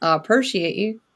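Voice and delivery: put-on Southern US accent on every word. Repeating a thank-you line to make a point, in a Southern accent. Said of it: "I'll say it in my southern accent".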